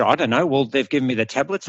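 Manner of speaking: usual speaking voice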